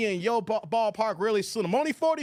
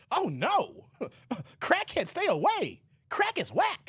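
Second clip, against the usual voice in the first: mock young teen voice, higher pitch; 4 semitones higher than usual. Acting out own reaction to a crackhead: pretending to be a fourteen-year-old. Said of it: "I'd be like a little fourteen-year-old".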